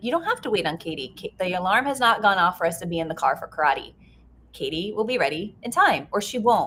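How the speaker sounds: ordinary talk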